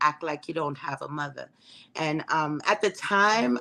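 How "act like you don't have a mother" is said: put-on very stern, soft Trinidadian accent. Telling of announcing her pregnancy, she quotes her mother, imitating mom's stern Trinidadian voice. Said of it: "in her very stern Trinidadian voice".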